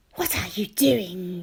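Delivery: hissing the words out, demanding tone. She bends down to Yanni while two others stare, hissing. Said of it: "she hisses".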